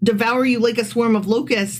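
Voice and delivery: plain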